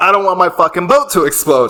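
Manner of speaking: mock abrupt, sudden, high blurted-out exclamation. Retelling suddenly yelling out on a crowded boat dock, retelling own sudden yell. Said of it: "And I suddenly yell out".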